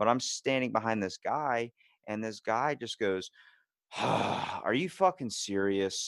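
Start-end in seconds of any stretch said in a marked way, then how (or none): 4.0-6.1 loud, play-acted fed-up, exasperated tone. Retelling what a man in a store line said, a loud remark. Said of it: "Like out loud so everyone can hear".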